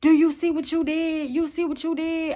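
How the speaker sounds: put-on high, accusing shout, repeated. Retelling a man on the bed yelling at the speaker: imitating someone yelling. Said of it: "just yelling at me".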